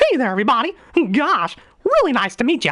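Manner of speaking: very high pitch bouncing up and down. Showing off one of the best voices learned: Mickey Mouse voice. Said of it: "first voice I ever learned was Mickey Mouse".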